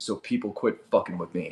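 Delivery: low, soft, mumbled mutter. Retelling a man's answer after he slumped down in his chair, muttering under his breath. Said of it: "under his breath".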